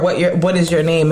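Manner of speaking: ordinary talk, nothing marked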